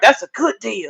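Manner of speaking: hushed, passing, under-the-breath half-whisper. Retelling what a passing lady said about the deal: imitating a half-whisper. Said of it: "whispering under her breath".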